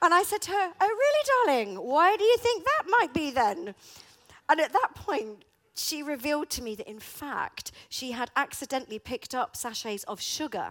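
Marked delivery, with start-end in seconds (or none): 0.8-3.7 smug, knowing tone, high-pitched and loud. Retelling her reply to her daughter, imitating her own smug tone. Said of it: "I put on my smug face".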